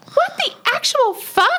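very high-pitched, shrill exclamation. Retelling what a woman in the kitchen said, in a high-pitched shrill voice. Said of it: "her sort of high-pitched, shrill voice".

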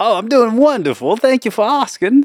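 fake British accent, very high pitched. During a thirty-second role-play round, a speaker answers in a put-on british accent. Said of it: "we were talking in British".

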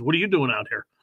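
normal talking voice

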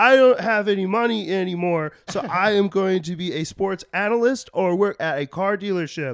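piercing, very high, very loud puppet voice. Acting out former players at forty with no money, in a Kermit the Frog voice. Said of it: "Why do they sound like Kermit the Frog?".

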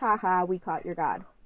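ordinary talk

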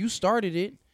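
put-on high, petty, childish playground voice. Retelling how someone answered an apology: imitating petty childish arguing. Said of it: "They hit me with some petty kid shit like that".

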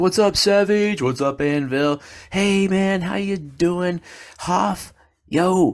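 high, loud calling out across a room.

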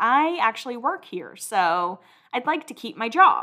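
ordinary delivery

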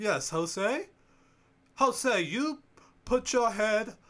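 put-on British English accent. Retelling what a woman said to Jose, in an English accent. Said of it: "English accent".

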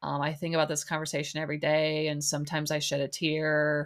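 play-acted level, droning, deadpan flat monotone. Quoting a man known for talking in monotone, in a flat monotone. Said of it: "he's like talking in this monotone way".

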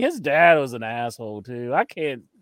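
plain

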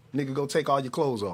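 put-on calm, mellow voice. Retelling an order given without a raised voice: imitating a calm, mellow voice. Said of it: "I'm talking about calm, mellow, the way she said it".

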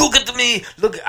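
failed put-on Cuban accent. Reading a news story, imitating Tony Montana: bad Tony Montana Cuban accent. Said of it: "I can't do a fucking Cuban accent".

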